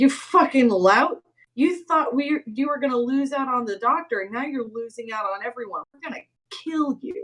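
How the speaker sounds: goading, provoking, insulting taunt. Taunting an enemy named Danny in character to provoke him: provoking taunt. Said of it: "I wanna provoke Danny".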